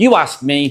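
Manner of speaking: normal talking voice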